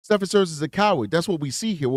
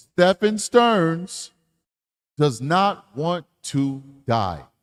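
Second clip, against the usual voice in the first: grand, almighty pronouncement as if from the heavens. A speaker repeats the point for the people in the back, in God voice. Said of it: "put the God voice on".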